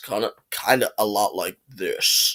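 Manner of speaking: very deep, soft voice. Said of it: "with a little bit of a way deeper voice".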